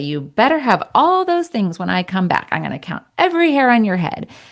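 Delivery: calm, playful, silly, lighthearted teasing tone. Showing a parent how to say the line to a child: silly, lighthearted way. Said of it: "you're saying in a silly, lighthearted way".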